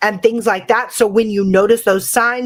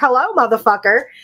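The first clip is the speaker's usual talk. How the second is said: put-on kid voice; 3 semitones higher than usual. Speaker recounts opening a basement door, doing the TikTok kid voice. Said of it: "Like in that voice".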